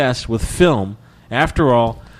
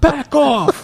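mock very high, hard yelling; 3 dB louder than usual. Retelling how a high school coach would yell it at you: yelled. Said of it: "he would just yell it at you".

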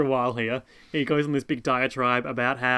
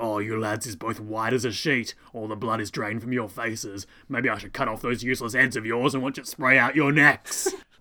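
orc-style creature voice. Retelling a dub's version of Jack threatening two lads: speaking like an Uruk. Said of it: "he speaks like an Uruk".

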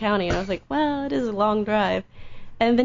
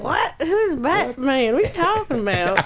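slight Kentucky accent creeping in; 3 semitones higher than usual. Speaker retelling their first meeting and a Batman toy, slight Kentucky accent. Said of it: "I hear that Kentucky voice coming in now".

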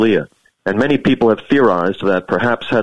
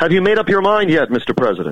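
raised, pitched-up yell; 7 semitones higher than usual. Retelling calling out a question to the president while waiting to vote: retelling a yell. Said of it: "So I yelled out".

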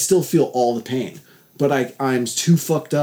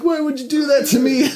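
very high, sobbing, crying voice; 12 semitones higher than usual. Retelling being given more Dilaudid through an IV: imitating own past crying. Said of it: "I was like crying like".

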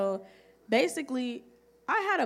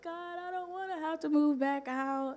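sobbing, crying, high and tearful voice; 6 semitones higher, 3 dB quieter than usual. Retelling a prayer said while crying on the floor: imitating own past crying. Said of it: "I'm just crying and rolling on the".

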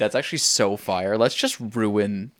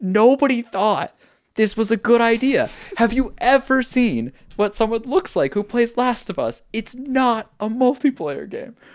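acted, very high, loud, full-throated yelling rant; 13 semitones higher, 5 dB louder than usual. Speaker re-enacts standing up at the dinner table to shout, retelling a shout. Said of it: "I literally stood up at the dinner table and just shouted".

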